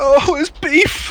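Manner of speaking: mock, very high-pitched, loud, whiny crying wail. Speaker tells the others they would miss them, imitating someone crying. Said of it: "You'd come crying".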